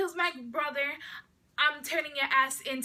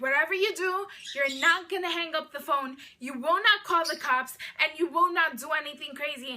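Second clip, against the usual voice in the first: put-on raised voice, words set down hard; 3 dB louder than usual. Retelling what a caller demanded on the phone: imitating someone raising their voice. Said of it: "he starts raising his voice at me".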